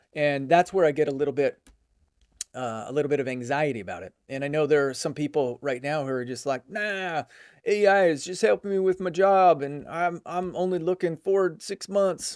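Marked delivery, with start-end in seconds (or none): 6.7-12.4 casual put-on Southern US accent. Speaker mimicking people who shrug off worries about ai, put-on southern accent. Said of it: "I don't know why I did a um, a southern accent there".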